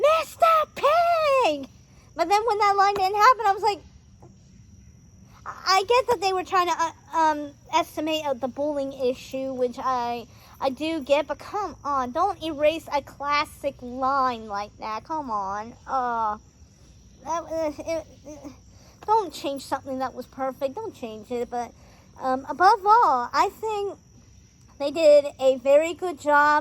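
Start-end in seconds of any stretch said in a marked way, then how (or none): 0.0-1.7 high-pitched, slow, drawn-out, belted shout. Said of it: "gonna shout in the movie theater".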